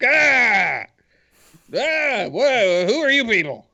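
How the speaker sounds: put-on cranky, angry old man voice, high and slow. Voicing an angry old man storming out of a burning cave: angry old man voice. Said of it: "an old, angry guy come storming out".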